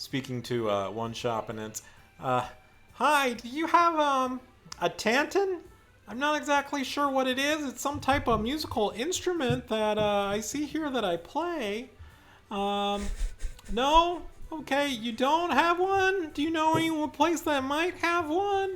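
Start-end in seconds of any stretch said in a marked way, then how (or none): 2.9-18.8 very high, pinched, nasal put-on character voice. Narrating a scene to Lilo, the speaker voices a stranger at a shop: nasally voice. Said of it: "this kind of nasally uh, voice".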